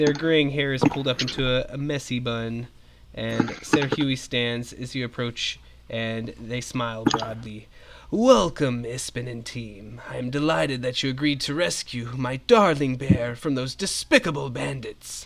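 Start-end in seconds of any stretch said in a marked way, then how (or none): 8.1-15.3 husky exclaimed line. Narrator voicing Ser Huey welcoming Ispin and the team: husky voice. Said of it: "they exclaim in a husky voice".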